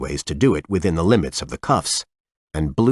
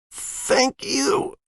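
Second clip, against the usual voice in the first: feeble, weak, shell-shocked whispered croak; 4 dB quieter than usual. Narrating a story, voicing the skinny man in a weak, shell-shocked croak. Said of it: "a weak, shell-shocked voice croaked".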